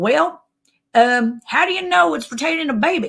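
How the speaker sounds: put-on broad backwoods country accent. Retelling a talk with a doctor, imitating a super country doctor. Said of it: "And he is super country".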